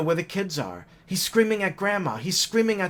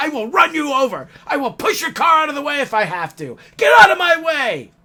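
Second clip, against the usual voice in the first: loud, high-pitched, threatening screaming; 7 semitones higher, 8 dB louder than usual. Retelling the driver's threats to the family: imitating someone yelling threats. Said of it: "continuously yelling and screaming and making threats".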